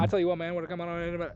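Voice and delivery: soft, mumbled, run-together small-town speech. Showing how other local people talk: imitating mumbling Boomhauer-style locals. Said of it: "the people that go".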